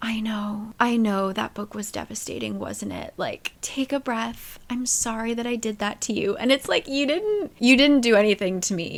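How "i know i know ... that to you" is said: mock, gentle, soothing, consoling, reassuring tone. Retelling an author's note from a book, imitating a hand-holding, comforting tone. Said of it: "it felt like she wanted to hold our hands".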